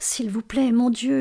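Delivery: murmured under breath. Delia, waiting by the door for Jim to arrive: murmured prayer. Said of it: "murmura Delia".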